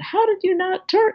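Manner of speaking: put-on very high-pitched, shrill, scolding holler. Retelling a woman in a suit who got out at a stoplight: imitating a woman yelling. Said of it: "she starts yelling at me".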